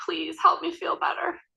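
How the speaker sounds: put-on very high, creaky tiny child voice. Recounting a patient's plea through her mask: her little voice. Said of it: "I could hear her little voice".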